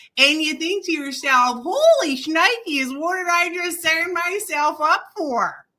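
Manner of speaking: high, loud Midwestern accent. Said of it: "I'm gonna do it in a Midwestern".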